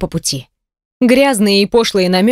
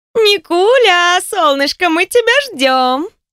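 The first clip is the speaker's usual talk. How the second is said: put-on very high, tipsy, drunken woman's voice; 9 semitones higher than usual. A woman on the phone greets the narrator, drunk woman's voice. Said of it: "слышу пьяный женский голос".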